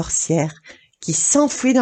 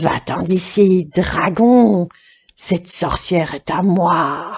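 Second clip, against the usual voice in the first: deep, slow, gruff monster growl, "moi" stretched. Reading the story, the narrator voices a creature ordering a dragon away: growling deep voice. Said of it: "il grogna d'une grosse voix".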